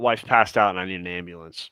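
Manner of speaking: usual speaking voice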